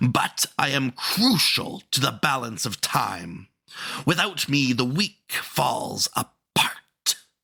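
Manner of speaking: frustrated, proclaiming monster voice. Narrator reading the Monday Monster's speech in a story, Monday Monster bellowing. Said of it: "This was the Monday Monster, a being born from the neglected and forgotten hours of countless Mondays. I am the guardian of Mondays, / the Monday Monster bellowed".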